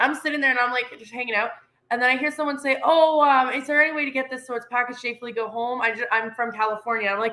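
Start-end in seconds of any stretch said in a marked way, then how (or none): none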